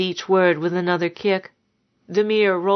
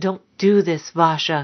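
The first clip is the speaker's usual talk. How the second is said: whispered, slower. Narrator reads a man catching a woman sneaking out of the house: whispered. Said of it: "he had whispered".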